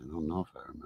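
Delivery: quiet and sheepish. Answering the other speaker's quiz question: quiet and sheepish. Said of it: "you said that very quietly, sheepishly".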